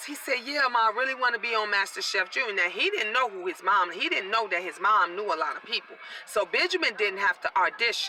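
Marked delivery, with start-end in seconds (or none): none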